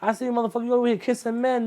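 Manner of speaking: mocking, jeering tone, high pitch.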